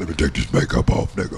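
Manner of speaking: affected, put-on female voice. Imitating how Harmony might talk: put-on voice imitating Harmony. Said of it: "Do you hear the voice you're putting on".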